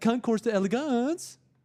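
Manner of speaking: very high California valley accent. Joking about how a California accent would sound: California valley accent. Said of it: "California accent would be like".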